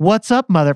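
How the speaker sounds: robotic, artificial machine-like voice. Describing an AI video with millions of views, imitating its robot voice. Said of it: "It was just the robot voice like talking".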